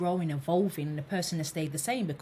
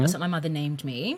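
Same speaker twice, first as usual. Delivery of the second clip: ordinary delivery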